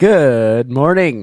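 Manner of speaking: very loud, booming, mic-overloading delivery. Greeting the others at the start, very loud. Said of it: "you're really loud".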